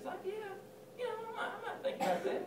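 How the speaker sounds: high, soft, wavering, hesitant, reluctant voice.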